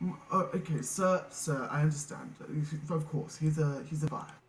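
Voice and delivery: put-on loose, approximate British accent. Describing a forensic character the player walks up to, sort of British accent. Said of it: "he speaks in a sort of British tone".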